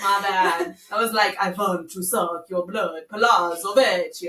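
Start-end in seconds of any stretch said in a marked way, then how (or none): 1.4-4.3 Transylvanian vampire-style accent. Speaker redoes an attempt at Italian that came out like a vampire: Transylvanian vampire accent. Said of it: "it came out Transylvanian".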